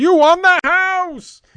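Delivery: very high, loud, slow radio announcer voice. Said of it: "in his great radio voice".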